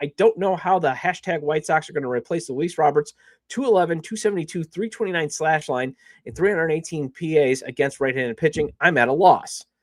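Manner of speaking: usual speaking voice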